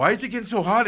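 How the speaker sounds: alarmed, frantic panic, high and loud. Retelling driving a car that kept getting hotter: acting out own panic. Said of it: "I'm like panicking".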